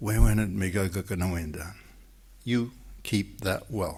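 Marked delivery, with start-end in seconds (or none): 0.0-1.7 put-on whispering. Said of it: "she whispers in my ear".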